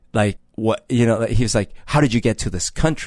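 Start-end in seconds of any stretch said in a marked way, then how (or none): 1.8-3.0 put-on mean tone. Retelling a question asked about their passport: imitating a mean question. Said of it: "he says it kinda mean".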